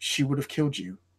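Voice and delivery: strong voice slipping into slightly weakened softness. A woman looks down at you and speaks, in a slightly weakened voice. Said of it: "it's slightly weakened, and it goes".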